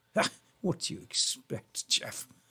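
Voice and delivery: soft, breathy, half-whispered snooty voice. Demonstrating how a stuck-up character talks, stuck-up character voice. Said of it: "So he talks like this".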